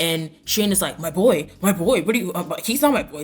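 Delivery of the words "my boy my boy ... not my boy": mock panic, frantic hyperventilating, about to lose it. Recapping a show's after-party scene, acting out a character's reply, imitating someone hyperventilating. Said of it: "Literally hyperventilating, literally about to lose his mind".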